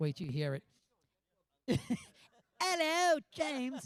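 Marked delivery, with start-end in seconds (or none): 2.6-3.9 very high-pitched, fake put-on British accent. Retelling a story, the speaker repeats a man's greeting in a British accent. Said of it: "I do a great British accent".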